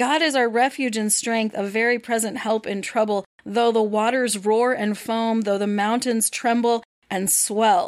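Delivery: ordinary delivery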